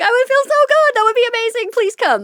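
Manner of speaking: very high, very loud, fast, thrilled shrieking. Telling the listener how they reacted to his wife's phone call: retelling excited screaming. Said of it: "And I started screaming".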